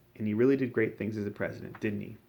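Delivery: plain reading voice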